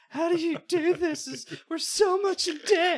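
very high, loud, drawn-out hysterical sobbing. Retelling how she panicked over the bills the first month, imitating someone crying hysterically. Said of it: "she's crying, like hysterically".

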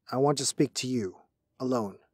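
plain reading voice

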